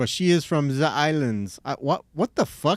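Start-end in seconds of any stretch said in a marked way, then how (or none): 0.0-1.6 horrible German accent. Talking about a friend from the islands, slipping into an accidental german accent. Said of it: "I just went German all of a sudden".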